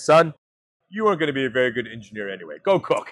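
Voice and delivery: bone-dry, matter-of-fact deadpan, no fuss. The speaker quotes his rocket-scientist dad's reply to him: retelling dad's deadpan line. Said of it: "he looks at me deadpan and says".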